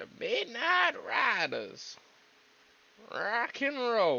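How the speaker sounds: high, slow, drawn-out put-on announcer voice. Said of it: "Why do I sound like, wow?".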